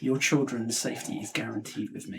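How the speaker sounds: hushed whisper, breath only. A tabletop player speaks in character during a persuasion check, whispering. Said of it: "as a whispered one".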